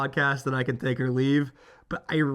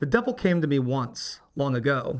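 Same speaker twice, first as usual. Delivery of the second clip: ordinary delivery, nothing marked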